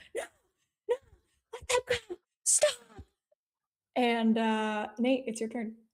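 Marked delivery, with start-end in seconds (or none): 0.1-2.7 very high, rushed, frantic shrieking scream. Voicing a character caught among too many people, screaming in character. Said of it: "and he's screaming. He's like".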